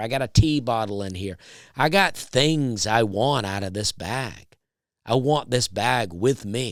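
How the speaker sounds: ordinary delivery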